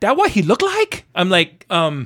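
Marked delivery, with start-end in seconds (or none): 0.0-1.0 very high, squeaky put-on voice. Retelling a conversation about his brother, imitating how she sounded. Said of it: "this is what she sounded like".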